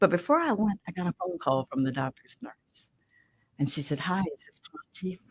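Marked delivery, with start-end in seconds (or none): 4.0-5.2 soft-spoken, hushed, very soft voice. Speaker retells a phone call from the doctor's nurse, real soft voice. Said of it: "Real soft voice".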